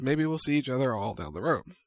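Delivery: ordinary delivery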